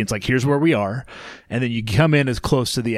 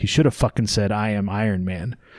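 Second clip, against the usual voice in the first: mock half-muttered aside, lower and slower; 2 semitones lower than usual. Retelling an editor's remark during a lull at a meal, retelling a mutter under breath. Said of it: "just kind of halfway under his breath".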